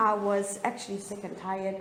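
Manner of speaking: normal talking voice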